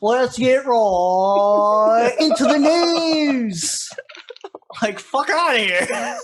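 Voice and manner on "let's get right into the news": drawn-out, deliberate, very slow, stretched delivery. Imitating an internet personality's intro line: Keemstar impression. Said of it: "He's like".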